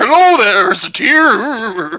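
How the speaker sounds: slow, high-pitched horse voice, Tier stretched out. Trying out a voice for a horse: Mister Ed voice. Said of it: "I keep on thinking Mister Ed".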